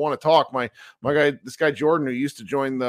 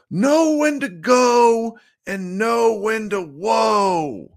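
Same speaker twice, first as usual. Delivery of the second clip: mock very high, loud, stretched country-accent holler; 9 semitones higher, 5 dB louder than usual. Recalling the coach who used to yell at you in high school, do Pat Hernandez's thick country accent yell. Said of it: "he used to yell at me in his thick country accent".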